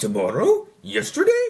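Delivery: swooping, creepy clown voice. Recapping a show, the speaker retries a quote, in a Pennywise voice. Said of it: "let me try that voice again".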